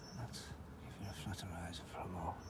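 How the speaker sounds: quiet whispered delivery.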